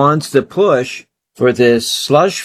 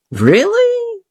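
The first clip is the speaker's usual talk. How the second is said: very high, mocking falsetto impression voice. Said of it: "And he talks like this".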